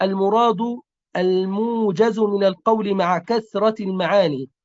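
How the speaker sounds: normal talking voice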